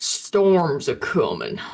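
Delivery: swooping put-on fisherman voice, mouth full, muffled. Telling the others about the chance of rain, speaking in a fisherman voice. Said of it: "I put on my best fisherman voice".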